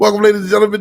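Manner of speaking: very loud, high shouted yell. Opening the show on the mic again: yelling. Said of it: "Now it sound like you're yelling".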